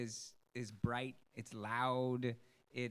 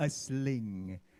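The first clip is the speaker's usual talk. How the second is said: mock dramatic tone, louder; 5 dB louder than usual. Repeating how someone just called out a word: imitating a very dramatic delivery. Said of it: "in a very dramatic fashion".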